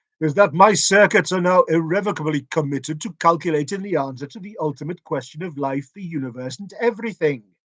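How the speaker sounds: loud, booming bellow in a computer-like voice. Narrator voicing the computer as it addresses everyone: Deep Thought bellowing. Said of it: "bellowed the computer".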